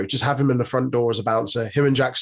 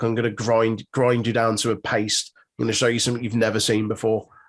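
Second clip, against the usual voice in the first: ordinary talk, nothing marked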